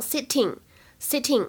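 sitting said the British English way, crisp clear t.

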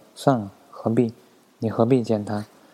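ordinary delivery

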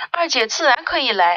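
ordinary delivery

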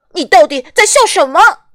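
loud, high, furious, angry shout. Reading a story aloud, voicing a character confronting someone who laughs; angry shouting. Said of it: "匹诺丘愤怒地喊着".

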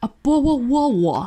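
clumsy put-on pidgin British accent, slow and high. Retelling how they teased someone over saying bottle of water: pidgin british accent. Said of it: "by my pidgin British accent".

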